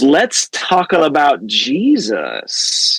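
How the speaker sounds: very slow, sly sing-song drawl, Jesus stretched out. Retelling a son's bedtime line to a parent: imitating a sly tone. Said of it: "he says it with this, like, sly sound in his, in his voice".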